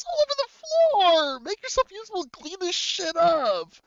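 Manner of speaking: put-on heated quarrel, shrill, very high, swooping. Acting out a character scolding his servant over spilled donuts: acted angry arguing. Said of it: "you hear him argue".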